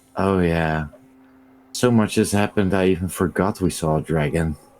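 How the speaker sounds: sighs, then mutters half under breath. Voicing Oddleif, who sighs about forgetting the dragon: sighing mutter. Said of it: "Oddleif sighs and sort of mutters".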